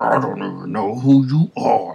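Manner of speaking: loud, rough-edged put-on character voice. Talking about a show, the speaker does a line in their character voice. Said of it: "let me do my voice".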